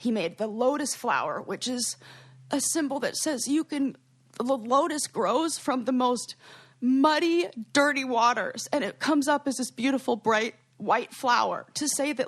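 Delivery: choked-up voice catching, close to tears. Explaining the lotus flower symbol he made, which the speaker incorporated: about to cry. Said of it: "I'm going to cry again".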